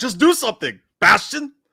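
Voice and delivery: very high, shrill, drawn-out screaming yell. Retelling a reaction to a movie scene: imitating own screaming. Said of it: "I was also screaming".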